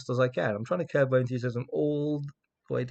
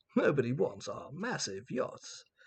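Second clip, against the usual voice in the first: posh automated-sounding voice; 7 dB quieter than usual. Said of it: "posh ninnies who have incredibly unrealistically sounding voices".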